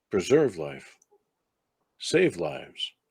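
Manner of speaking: whispering, eerie, not-quite-human voice. Voicing a flaming sphere that speaks to a player: whispering, not-quite-human voice. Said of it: "the whisper that you hear from that is of, um, not necessarily a mechanical voice, but not necessarily human either".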